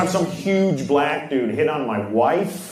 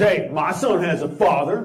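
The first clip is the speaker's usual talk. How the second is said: normal talking voice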